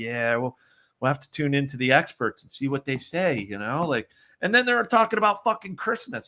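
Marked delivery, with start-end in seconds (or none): 0.0-3.4 sarcastic delivery. Retelling own reply about waiting for the experts: imitating own sarcastic remark. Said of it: "my sister and I are just sarcastic".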